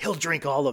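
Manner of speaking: acted whispering. Retelling what their girlfriend whispered to them during a film, retelling a whisper. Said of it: "she just leans in and whispers".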